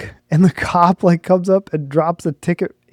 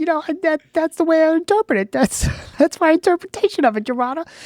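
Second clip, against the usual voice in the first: very high, pitched-up voice; 11 semitones higher, 3 dB quieter than usual. Quoting a defendant's argument to the judge: Mike Tyson-like voice. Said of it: "He sounded so similar to, like, a Mike Tyson".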